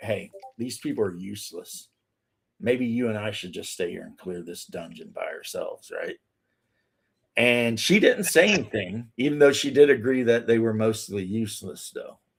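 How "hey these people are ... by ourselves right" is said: very low, very quiet conspiratorial whisper. Speaker retells what the cleric whispered to the berserker in the group: retelling a whisper. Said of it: "leans over to the berserker in the group and whispers to her like".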